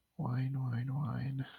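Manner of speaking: soft, very quiet, half-whispered sleep talk. Voicing a sleeping character murmuring to himself: softly half-whispering while asleep. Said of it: "just softly whispering it to himself as he's sleeping".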